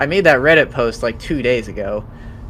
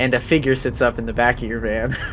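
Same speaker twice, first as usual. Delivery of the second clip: normal talking voice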